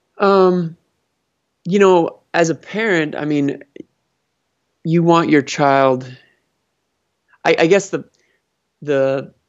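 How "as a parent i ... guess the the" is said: hesitant, stammering, stuttering delivery. Answering a question about parents and children: stuttering. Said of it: "sorry, I'm stuttering here".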